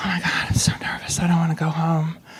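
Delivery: put-on breathy, jittery, nervous whisper. Retelling standing at the judge's table on the bottom: imitating own nervous past self. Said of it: "I'm standing there and I'm shaking".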